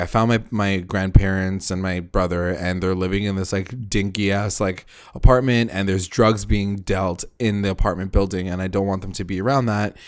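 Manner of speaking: usual speaking voice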